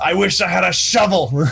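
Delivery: screaming. Voicing a character who leaps through fire and lands: screaming. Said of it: "and screams".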